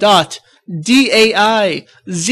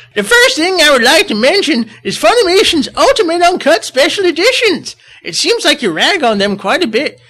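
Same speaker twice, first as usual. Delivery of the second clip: put-on old-man voice, pitched high; 7 semitones higher than usual. Reading a message aloud to be funny: Dub Roshi voice. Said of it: "I'm going to read this in the Dub Roshi voice".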